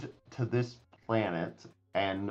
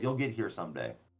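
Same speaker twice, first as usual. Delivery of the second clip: condescending, patronizing tone; 3 semitones lower, 5 dB quieter than usual. Voicing a character answering a confused player in the game: condescending. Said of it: "he just condescendingly says".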